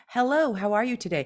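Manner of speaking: ordinary delivery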